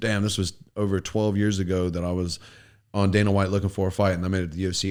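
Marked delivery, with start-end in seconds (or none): none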